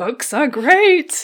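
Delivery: loud, slow, high-pitched shouting.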